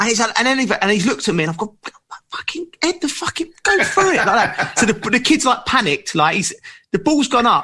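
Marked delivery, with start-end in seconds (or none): 2.3-4.2 screaming in a much higher pitch. Retelling yelling from the sideline at a centre-half who ducked a header; retelling screaming at a player. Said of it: "I'm screaming at this lad".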